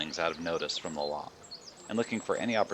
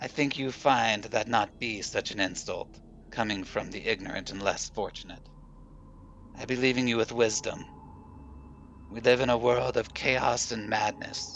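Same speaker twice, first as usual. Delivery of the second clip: put-on high, old hag witch voice; 5 semitones higher than usual. The old hag answers the young woman who just called her crazy; old hag voice. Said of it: "and sees what appears to be a mass of animal fur and a brush that transforms into an old hag. / The hag was there. She seemed startled that [name] was there with her. / and sees what appears to be a m".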